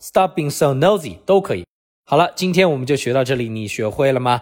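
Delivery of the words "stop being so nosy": normal talking voice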